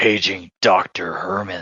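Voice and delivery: deep, low giant-robot hero voice. Imitating how the paging line should have sounded: Optimus Prime voice. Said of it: "Optimus Prime is paging me".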